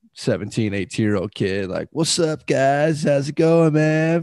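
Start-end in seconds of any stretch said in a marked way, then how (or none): 1.9-4.2 chill, easygoing, laid-back hippie voice. Retelling a teenage waiter greeting them at their table, talking like a hippie. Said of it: "talking like a hippie".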